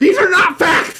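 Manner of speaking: shrill, loud, angry outburst in a German accent. Host answering a donor's message he just read out, like an angry German. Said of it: "You said that like you're an angry German".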